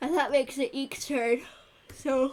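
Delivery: talking through a yawn. Running a game encounter that's going overtime, yawning while talking. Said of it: "I don't know why I'm yawning".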